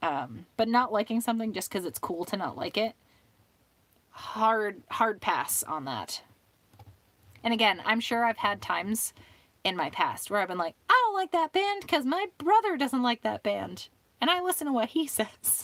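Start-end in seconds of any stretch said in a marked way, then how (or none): 10.9-15.6 squeaky, very high, swooping put-on character voice. Imitating own past self dismissing a band: put-on character voice. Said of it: "do you like my character voice?".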